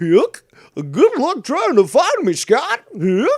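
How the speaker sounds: silly goofy voice, very high, very loud, drawn out. Trying the same line another way: goofy voice. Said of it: "do it more like a goofy".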